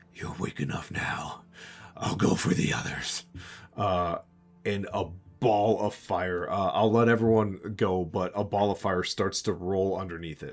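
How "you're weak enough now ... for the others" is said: eerie, tingling monster voice. Voicing a monster that has wounded a player: tingling monster voice. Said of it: "its voice still, uh, tingles".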